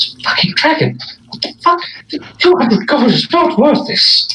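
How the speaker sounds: very high-pitched muttering under the breath. Tabletop player voicing his character facing a dragon: Abe muttering to himself. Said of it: "he's kind of like muttering to himself".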